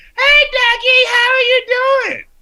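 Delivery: New York auntie voice, pitched way up. Retelling how the speaker's aunt in New York greets the speaker, Edith Bunker voice.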